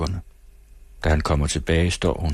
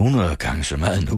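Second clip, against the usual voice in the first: plain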